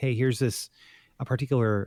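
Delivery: normal talking voice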